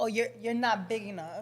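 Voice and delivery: normal talking voice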